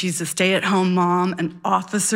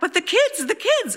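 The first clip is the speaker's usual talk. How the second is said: screaming way up high. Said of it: "she screams back".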